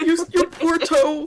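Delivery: very high, very loud, shrill, tearful, overly sad pity. Retelling her reaction to a stubbed toe: imitating her own overly sad reaction. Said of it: "I'm just like".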